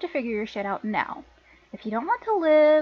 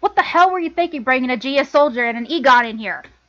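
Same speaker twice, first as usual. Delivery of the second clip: furious, very loud, angry tirade; 9 dB louder than usual. Voicing characters in a scene, taking on the angry sister: angry sister voice. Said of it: "let me get into my angry sister, uh, uh, voice here".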